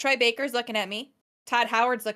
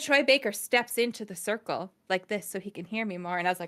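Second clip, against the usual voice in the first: ordinary talk, nothing marked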